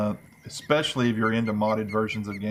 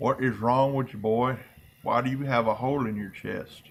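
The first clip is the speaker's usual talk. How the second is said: mock voice with dip in mouth. Roleplaying Jim Bob arriving on scene, asking the boys: Jim Bob voice, dip in mouth. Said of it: "I act like I got a big old dip in my mouth".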